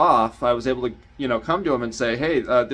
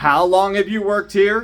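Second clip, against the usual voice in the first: mock furious yell, high-pitched, angry shout; 8 semitones higher, 4 dB louder than usual. Recalling someone who screamed right in their face, retelling a scream. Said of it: "screamed in my face at the top of their lungs".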